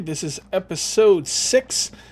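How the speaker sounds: very slow, carefully drawn out, deliberate. YouTuber introducing episode 6 of a Let's Play, very slow. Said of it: "the reason I said that so slowly".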